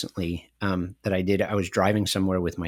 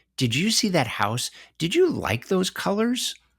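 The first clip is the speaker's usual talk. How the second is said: put-on voice used when talking to a toddler.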